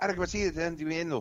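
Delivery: high, heated, massive Spanish argument between two voices. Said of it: "when Spanish people have that massive argument".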